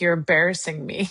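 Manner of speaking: heavy, thick, put-on Eastern European accent. Quoting a golfer giving tips at a tournament, heavy Eastern European accent. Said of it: "he had this big heavy ab- accent, Eastern European".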